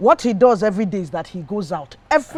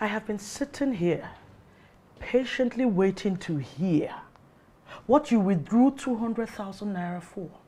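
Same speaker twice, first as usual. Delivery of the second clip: soft, eerie, scary whisper. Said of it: "is that why you scared me like that".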